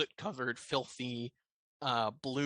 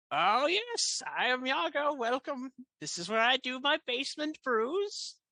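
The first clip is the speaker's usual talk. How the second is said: very high-pitched fae creature voice; 12 semitones higher than usual. Voicing Iago the red cap welcoming the party to his shop: Iago the red cap voice. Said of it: "Are you Iago?".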